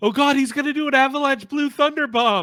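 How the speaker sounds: shrill, high, excited scream at full volume. Retelling watching a wrestling match, imitating own excited screaming. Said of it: "I was screaming".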